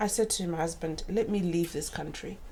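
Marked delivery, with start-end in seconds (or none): none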